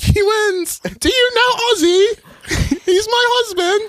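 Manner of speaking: very high-pitched, very slow, stretched-out drawl. Imagining a talent show judge's reaction: Sharon Osbourne impression. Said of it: "she's like".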